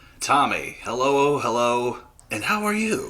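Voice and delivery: drawn-out, very slow radio announcer voice. Guest greeting the host at the start of the show: radio voice. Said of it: "This is my radio voice".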